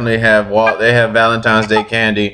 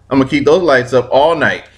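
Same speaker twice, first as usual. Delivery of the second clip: normal talking voice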